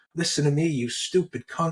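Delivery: furious, angry ranting in a put-on man's yelling voice. Retelling a guy yelling at his sister over the phone, imitating his yelling. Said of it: "he's yelling at the phone".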